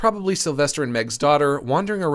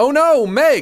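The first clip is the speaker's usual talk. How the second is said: goofy, very high, loud, squeaky cry; 10 semitones higher, 7 dB louder than usual. Describing a video, speaker voices a man crying out to Meg; goofy Mickey Mouse voice. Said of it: "in a goofy Mickey Mouse-ass voice".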